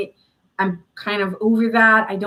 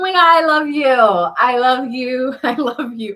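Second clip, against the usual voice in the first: mock drunk talking, higher and louder; 4 semitones higher, 4 dB louder than usual. Imitating a drunk person at a bar, mock drunk talking.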